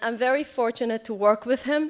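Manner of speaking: ordinary talk, nothing marked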